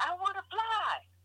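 very high, very slow, drawn-out shout. Recounting crying while he asked what they really want, retelling a yell. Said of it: "And I just yell at him".

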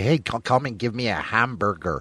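put-on American accent. Speaker demonstrates how to talk like people in the States, mock American accent. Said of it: "speak like they do over in the States".

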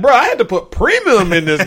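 fed-up, mad, indignant griping. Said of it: "He mad".

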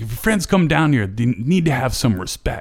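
high-pitched, angry, harsh scolding. Retelling how a mother tore into her son: imitating a mother scolding angrily. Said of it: "tearing into".

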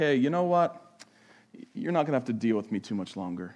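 mock sorrowful, low, sad, disappointed tone. Explaining how they read his words, the speaker voices him: imitating a sad, disappointed tone. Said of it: "a sense of sadness or disappointment in his tone".

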